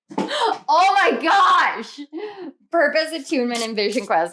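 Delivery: very slow, high, drawn-out, excited yell. Reading out a card and getting excited: yelling. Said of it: "I'm sorry for yelling".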